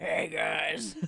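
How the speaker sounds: rough, creaky, raspy smoker's voice. Joking about smoking at fifteen, in a smoker voice. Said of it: "to have the smoker voice like".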